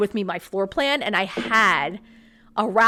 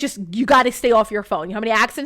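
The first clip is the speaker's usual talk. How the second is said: mock-stern police officer voice; 5 dB louder than usual. Retelling a traffic stop, quoting the officer's warning; imitating a stern officer. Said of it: "He was like stern".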